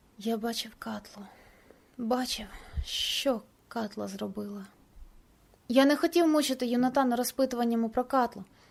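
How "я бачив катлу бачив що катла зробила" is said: barely audible, very quiet, slow, reluctant and unwilling. Asked why he shouted for help, he answers quietly. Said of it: "Він так тихо відповів мені".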